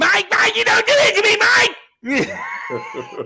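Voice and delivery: shrill, very high, very slow, drawn-out scream. Retelling sports radio hosts arguing on air: imitating Mad Dog screaming. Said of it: "screaming at each other".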